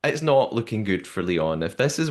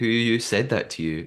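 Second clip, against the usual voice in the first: ordinary talk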